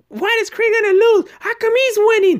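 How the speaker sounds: very high-pitched, mad, indignant outrage. Speaker retells a woman upset that a boxer loses in a movie, mock-angry. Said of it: "You could tell she was mad".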